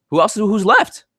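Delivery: voice jumping up to very high pitch. Discussing a team's injured players, asking who is left to play: voice going really high. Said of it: "My voice got really high there".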